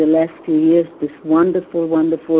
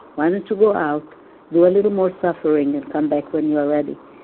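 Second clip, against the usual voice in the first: usual speaking voice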